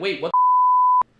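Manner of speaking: mock very high, loud freaked-out cry, stretched "the". Retelling a stranger pushing him to come outside, imitating being freaked out. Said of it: "I was freaked out 'cause I'm like".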